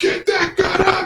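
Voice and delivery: very high, shrill scream. Speaker recalls a man who would turn around and yell at them; retelling a scream. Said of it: "you just hear him scream like".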